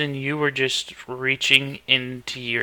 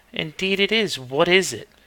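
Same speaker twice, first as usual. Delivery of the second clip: fully feminine-sounding put-on voice; 4 semitones higher than usual. Voicing a possessed character as a feminine voice comes out: feminine voice. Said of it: "real feminine voice comes out".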